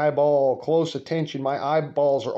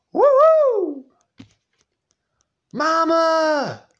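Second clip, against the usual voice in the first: very high, stretched, swooping full-lung whooping scream; 6 dB louder than usual. Retelling how a family member skinning a squirrel screamed: imitating someone screaming at full volume. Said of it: "he screams at the top of his lungs".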